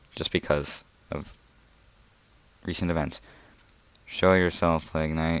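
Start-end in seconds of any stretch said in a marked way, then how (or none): 4.0-5.4 deadpan, flat, unmotivated monotone delivery. Saying a line in the most extremely unmotivated voice: flat unmotivated monotone. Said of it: "in the most extremely unmotivated mon monotone voice in the world".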